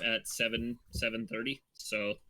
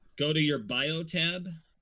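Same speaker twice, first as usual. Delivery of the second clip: slow, loud, drawn-out shouting; 5 semitones higher, 4 dB louder than usual. Directing a player to a tab during a game: shouting. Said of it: "I sound like I'm shouting".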